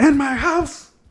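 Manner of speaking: play-acted angry outburst. Recounting a movie scene, the speaker quotes the man confronting Kate, retelling an angry outburst. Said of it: "he raises his voice".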